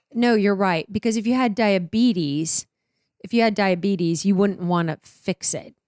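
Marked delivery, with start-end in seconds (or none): none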